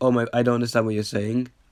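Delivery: plain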